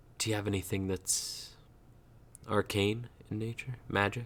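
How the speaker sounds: voice dropped low. Leaning in to ask another character a question: lower voice. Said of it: "I'll lean in and at a lower voice".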